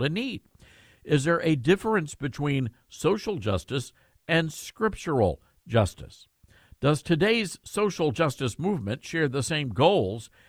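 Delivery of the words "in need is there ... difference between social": ordinary delivery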